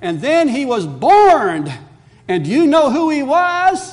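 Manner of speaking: put-on very loud, high, bursting with childlike excitement. Retelling how a four-year-old told her family the Christmas story, retelling a child's excitement. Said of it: "very excitedly with enthusiasm".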